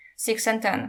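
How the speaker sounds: ordinary delivery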